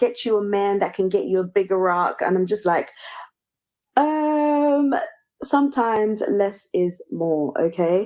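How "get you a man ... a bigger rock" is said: put-on American accent. Quoting what Americans said about her ring, in an American accent. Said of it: "doing it in an American accent".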